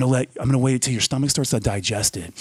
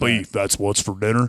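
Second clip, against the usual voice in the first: deep, low, drawling cowboy voice; 4 semitones lower than usual. Imitating an old beef commercial line: Sam Elliott impression. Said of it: "you got his voice down pat".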